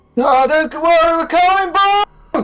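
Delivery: very high, loud shout. Voicing a character calling to a stranded man: shouting out. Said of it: "as he shouts out".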